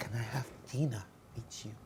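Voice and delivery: very quiet, soft, gentle, hushed voice. Recounting a newspaper report, the speaker acts out a request in a soft voice. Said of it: "in a soft voice".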